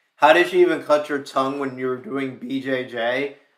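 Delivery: ordinary delivery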